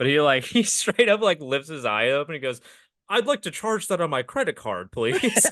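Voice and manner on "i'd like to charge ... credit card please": high, swooping guy voice.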